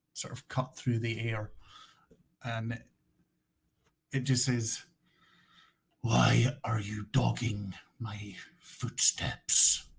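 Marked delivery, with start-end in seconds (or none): 6.0-9.7 very rough, coarse, rasping gravelly voice. Game master voicing a silhouetted stranger who confronts the party, very rough gravelly voice. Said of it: "a very rough, gravelly voice".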